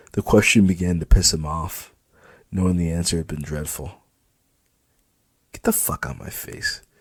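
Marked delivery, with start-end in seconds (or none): 5.6-6.8 muttered under the breath, slower. Reading a story, the narrator voices a man whom a question has angered: muttered under his breath. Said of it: "he mutters under his breath".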